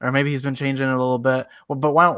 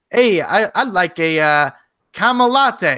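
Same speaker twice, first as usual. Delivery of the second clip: fake Canadian accent, unhurried and pitched up; 5 semitones higher, 4 dB louder than usual. Acting out ordering a caramel latte, in a put-on Canadian accent. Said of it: "you gotta do it in an accent though".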